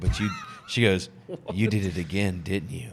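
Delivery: sinister, menacing, villainous evil voice. Retelling how she answered his story, in an evil voice. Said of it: "Like in a in an evil voice".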